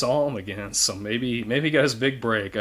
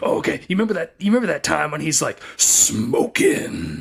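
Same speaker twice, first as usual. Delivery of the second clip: put-on gravelly voice, pitched up; 5 semitones higher, 4 dB louder than usual. Recalling a man who kept asking if you'd seen The Mask, imitating his gravelly voice. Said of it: "He had this gravelly voice".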